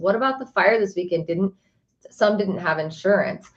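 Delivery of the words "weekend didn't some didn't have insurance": ordinary talk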